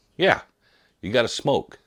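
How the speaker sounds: put-on light New York–New Jersey accent. Retelling what a man beside them said, in a New York, New Jersey accent. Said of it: "a little bit of a New York, New Jersey accent".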